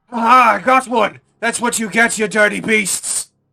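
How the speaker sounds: shrill, very loud, high-pitched yell. Voicing a voice behind a door after stabbing intruders: shouting. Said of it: "shout out".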